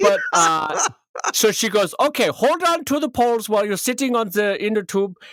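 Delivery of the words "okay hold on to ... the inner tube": bad Swedish accent drifting into German. Retelling an instructor's tube directions, Swedish accent turning German. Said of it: "it's becoming German now".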